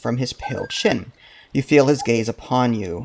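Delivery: ordinary delivery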